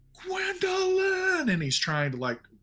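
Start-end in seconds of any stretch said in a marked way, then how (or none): 0.3-1.5 all-out, shrill, very high scream. Voicing a character calling out underwater: screaming a name. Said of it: "scream as loud as he possibly can".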